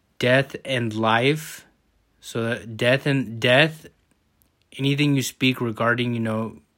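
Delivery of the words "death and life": slow, drawn-out, careful read-aloud. A speaker rereads a verse from Proverbs to the audience, reading slower. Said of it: "I'm going to read it slower".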